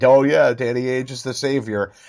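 sarcastic, tongue-in-cheek tone. Retelling what doubtful fans sarcastically said back then; mock-sarcastic retelling. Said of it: "people sarcastically said that".

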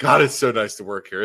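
ordinary talk

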